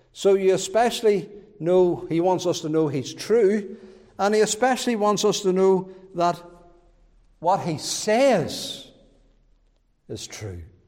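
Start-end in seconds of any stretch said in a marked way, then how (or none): 7.4-10.7 "what he says" drawn out, slow, stressed. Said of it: "That's the emphasis".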